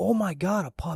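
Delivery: drawn-out, loud, high, startling yell. Recalling a guy who yelled at a lady with a dog, retelling a loud yell. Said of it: "but he yells like loud".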